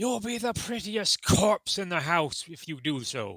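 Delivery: loud, shrill, put-on scream. Playing a character screaming a threat through a wall: screaming in character as Gustav. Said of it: "Gustav screams".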